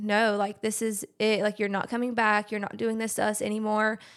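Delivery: normal talking voice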